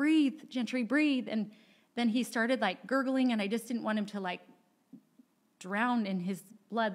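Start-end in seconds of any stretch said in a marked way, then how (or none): 0.0-1.3 high, desperate, frantic pleading yell. Recounting holding a man who wasn't breathing or responding: retelling own yell. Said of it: "I'm just yelling".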